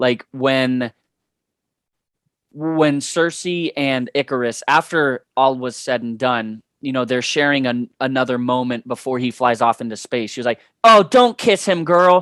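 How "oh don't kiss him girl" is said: loud, high-pitched shrieking, screamed. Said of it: "She would just scream her opinion".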